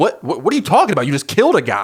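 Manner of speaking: mock panicked, freaking-out outburst. Retelling Jeff's reaction to his wife's confession: imitating someone freaking out. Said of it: "Jeff is freaking out".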